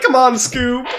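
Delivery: put-on cartoon slacker voice. Showing another player how the character talks: Shaggy voice. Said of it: "That's how Shaggy talks".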